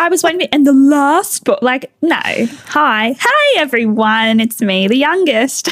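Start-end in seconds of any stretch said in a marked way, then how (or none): 3.1-5.7 upbeat, cheery, bubbly, drawn-out delivery. The youngest sibling greeting podcast listeners, bubbly. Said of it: "So bubbly".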